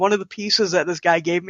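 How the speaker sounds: normal talking voice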